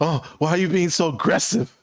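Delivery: acted scared, defensive voice. Retelling how a gossiping older man reacted when confronted: imitating a scared man. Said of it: "this guy got all scared and like".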